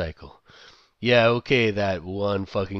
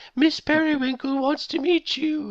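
very high put-on British accent, yelled. Retelling what a man yelled while chasing people around: put-on British accent yell. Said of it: "in a British accent".

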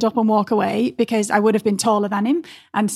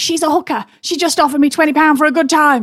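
pitched-up, threatening shouting man voice; 6 semitones higher, 4 dB louder than usual. Retelling what a threatening man on the train said: imitating a man shouting. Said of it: "He's shouting".

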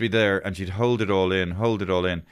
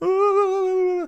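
put-on very high, loud little baby voice. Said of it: "And he".

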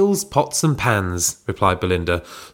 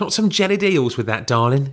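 put-on streetwise Cockney street accent; 5 semitones higher than usual. Others wonder why a character has suddenly turned street, streetwise voice. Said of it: "Why has she turned all street?".

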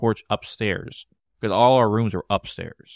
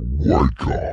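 evil, sinister, very low intonation; 7 semitones lower, 3 dB louder than usual. Retelling a dream where a figure hit the nightstand, imitating a very low, evil voice. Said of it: "with a very low, evil tone".

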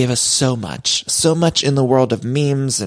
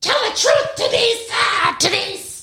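mock hysterical yelling, much higher and slower. A podcast host recalls a reality-show producer yelling at denise, imitating a producer yelling. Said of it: "he was like yelling".

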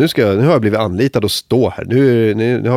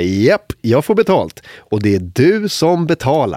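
slow, light, jokey, laughing-it-off delivery; 4 semitones higher than usual. Asked by a man whether they get paid for this, the speaker retells: retelling a joking reply. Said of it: "vi försöker skoja bort det och bara".

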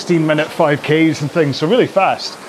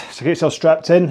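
plain

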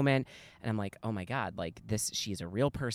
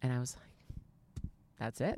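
normal talking voice

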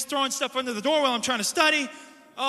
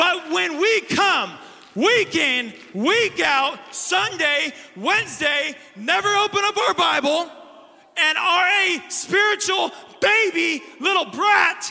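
shouting, pitched higher and louder; 5 semitones higher, 5 dB louder than usual. Preaching to Christians who never open their Bible: yelling. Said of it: "I'm not yelling at you, I'm yelling at myself".

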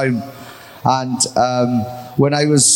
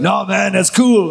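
odd creaky, raspy voice, a notch higher; 6 semitones higher than usual. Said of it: "Why are you talking like that?".

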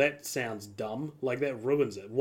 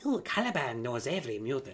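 soft, slimy, sleazy schemer voice; 5 dB quieter than usual. Comparing two film versions of a character, the speaker imitates his Apocalypse voice: Caliban voice. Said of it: "He talks like that".

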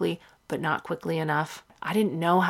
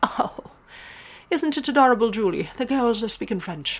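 put-on Irish accent, pitched up; 6 semitones higher, 4 dB louder than usual. Quoting the grown-ups reacting to the sisters speaking French, in an Irish accent. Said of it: "That's an Irish accent that I can do".

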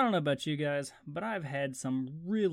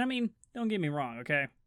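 usual speaking voice

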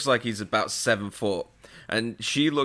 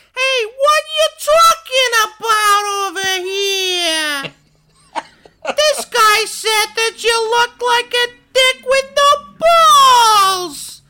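put-on heavy Bronx accent, very high and very loud; 12 dB louder than usual. Complaining about a movie character's accent, then imitating it: Pee-wee's Bronx or Queens accent. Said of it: "either Bronx or Queens, that kind of".

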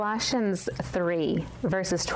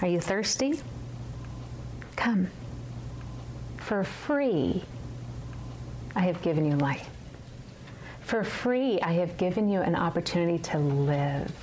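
mock tender, sugary, honeyed delivery. Quoting a passage from Revelation 21, retelling a sweet voice. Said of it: "God says in his sweet voice".

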